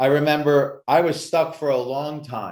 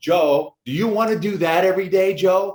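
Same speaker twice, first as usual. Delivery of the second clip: put-on California accent; 6 semitones higher than usual. Retelling his uncle's everyday lesson to him, in Uncle Tone's California accent. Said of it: "he had this California accent".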